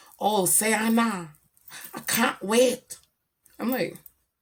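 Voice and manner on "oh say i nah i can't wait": bad, fake put-on English accent. Recalling starting to perform in other countries, the speaker puts on a bad English accent. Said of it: "that was my English accent".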